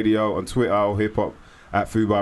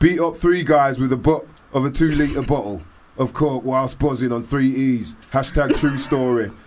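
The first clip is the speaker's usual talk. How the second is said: put-on, fake Leeds accent; 4 semitones higher than usual. Quoting what a man wrote about himself, in a put-on Leeds accent. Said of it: "I was trying to put on a Leeds accent there".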